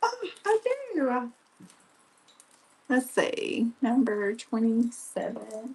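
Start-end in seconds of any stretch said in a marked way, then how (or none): 0.0-1.3 very high, thrilled, excited little cry, acted out. Recalling suddenly remembering a pair of fish earrings, retelling own excited reply. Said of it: "did you hear the excitement in my voice?".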